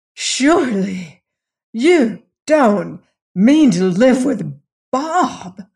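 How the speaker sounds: pained, slow, incredulous gasping disbelief. A mother reacts to her daughter not caring; gasped in pained incredulity. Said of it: "she gasped".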